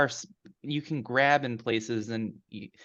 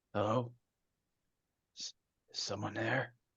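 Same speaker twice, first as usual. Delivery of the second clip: weak, faint, hurried, feeble calling voice; 9 dB quieter than usual. A game master voices someone calling out to the players, in a weak voice. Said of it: "And the voice is weak".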